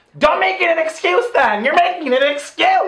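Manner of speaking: high-pitched, loud yell.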